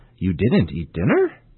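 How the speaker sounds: statement with rising intonation on dinner. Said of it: "use a rising intonation with a statement".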